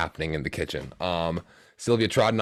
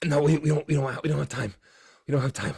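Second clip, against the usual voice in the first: pained, wounded voice, pitched up; 8 semitones higher than usual. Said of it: "He's wounded".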